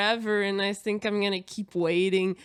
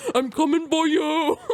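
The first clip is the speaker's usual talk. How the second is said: loud fake macho masculine voice; 7 semitones higher, 6 dB louder than usual. Joking about dressing up as a man, fake masculine voice. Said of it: "I love that that's your masculine voice".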